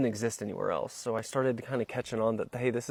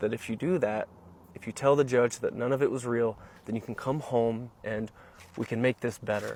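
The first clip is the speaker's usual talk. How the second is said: normal talking voice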